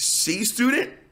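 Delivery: cracking, breaking voice mid-phrase. Addressing the audience, voice cracking. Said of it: "as my voice just cracked".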